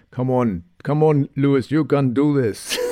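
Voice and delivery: bad put-on radio voice, urging. Recalling Toto on the radio to Lewis: Toto Wolff impression. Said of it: "That's a very bad impression. Toto Wolff, that's what he sounds like to me".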